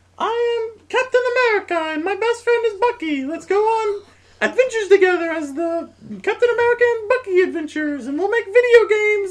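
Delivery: loud, squeaky, very high-pitched voice. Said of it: "I've sounded like Mickey Mouse".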